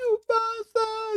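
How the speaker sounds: shrieked, very high screaming voice. Voicing a character during an interrogation scene, screaming in character. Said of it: "She's like screaming now".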